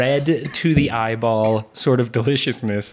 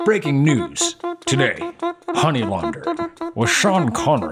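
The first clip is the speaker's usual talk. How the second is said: very high, swooping, sing-song put-on voice; 10 semitones higher than usual. Announcing the episode topic as breaking news: Sean Connery voice. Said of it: "I don't know why that's my only voice".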